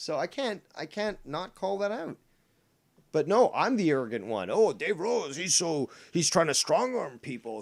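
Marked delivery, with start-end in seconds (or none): 4.5-7.6 put-on Scottish accent. Mocking what critics say about the speaker, imitating a scottish accent. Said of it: "I'm sorry to do this Scott accent".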